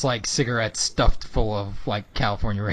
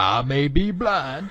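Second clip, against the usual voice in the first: very slow, drawn-out jazzman drawl; 4 semitones higher than usual. Describing a cartoon's blind jazz player dad, then quoting him: Toots voice. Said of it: "He's the stereotypical blind jazz player".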